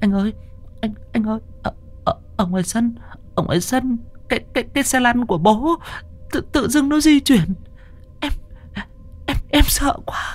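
slow, whispered, stumbling, terrified stammer. A frightened wife reports to her husband what happened outside, stammering in fear. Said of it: "nó uốn lưỡi mãi mới lắp bắp được".

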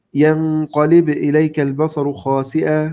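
ordinary talk, nothing marked

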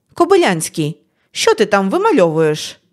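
squeaky and theatrical. The teacher calls out a pupil during class, squeaky and theatrical. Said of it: "Її слова прозвучали якось пискляво та театрально".

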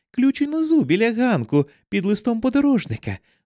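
as tender as can be, pitched very high. Narrator addressing John, who is breaking down the door, as tenderly as possible. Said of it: "сказала я якомога ніжнішим голосом".

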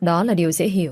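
ordinary delivery, nothing marked

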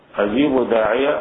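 ordinary delivery

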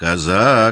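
threatening. A woman shakes a finger at a girl in front of the guests, threatening. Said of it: "проговорила она с угрозой".

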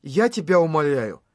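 ordinary delivery

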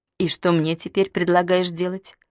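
ordinary delivery

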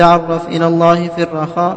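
ordinary delivery

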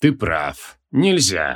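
cold, icy, low-pitched voice. The dead archmage's head answers the one holding it up, cold. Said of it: "холодно ответила голова архимага".

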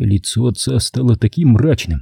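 ordinary delivery, nothing marked

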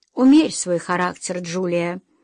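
plain

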